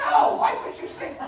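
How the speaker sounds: mock exasperated teacher voice, high, loud, laughing.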